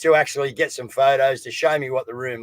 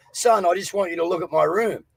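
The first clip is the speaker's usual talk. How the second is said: put-on tearful crying voice, higher; 5 semitones higher than usual. Retelling what the crying mum said at her room: imitating mum crying. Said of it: "and she's crying. She's going".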